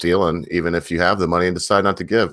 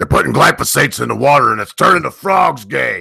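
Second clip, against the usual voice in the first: loud, rough, high-pitched pushed delivery; 8 semitones higher, 6 dB louder than usual. Answering another speaker who brought him up: Alex Jones impression. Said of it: "you said Alex Jones, and I just wanna say".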